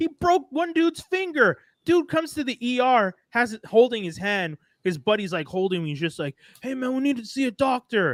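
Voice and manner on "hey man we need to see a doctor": urgent, wired, panicked, adrenaline-fuelled voice. Retelling an injured fighter's arrival at the ER, mock-panicked plea for help. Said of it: "and like panicked".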